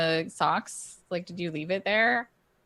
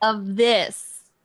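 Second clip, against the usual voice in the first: overly loud, slow speech, getting even louder; 3 semitones higher, 7 dB louder than usual. Speaking in character to a shopkeeper who might not understand: talking really loudly as if to a foreigner. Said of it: "I'm talking really loudly as though he can't understand me".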